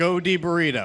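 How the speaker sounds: plain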